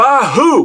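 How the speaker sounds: play-acted angry, aggressive bark, high and loud. Retelling how Paul Orndorff reacted while eating, imitating Paul Orndorff's aggressive angry shout. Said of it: "in the most aggressive, angry way".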